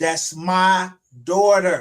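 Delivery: loud yelling, shouted out. Announcing his daughter walking across the stage: yelling. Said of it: "And I'm still gonna yell it".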